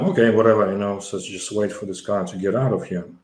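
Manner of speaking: normal talking voice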